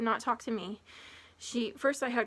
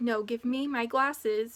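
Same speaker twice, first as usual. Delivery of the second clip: raised voice, louder and slower. Retelling demanding her glasses back from a woman, retelling a raised voice. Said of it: "So I raised my voice at her".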